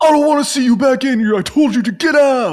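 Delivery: put-on very high, shrill shopkeeper voice yelling. Retelling how the store owner yelled at a shady guy: imitating someone yelling. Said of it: "the store owner starts yelling".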